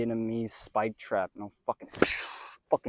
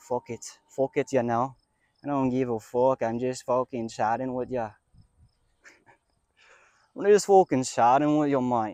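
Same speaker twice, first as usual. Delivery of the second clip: loud, put-on, fake Irish accent; 3 semitones higher, 6 dB louder than usual. Speaker shows off accents while chatting, in a fake Irish accent. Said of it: "it's a pretty good Irish accent".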